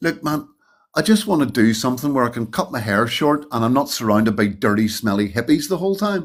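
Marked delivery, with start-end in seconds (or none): none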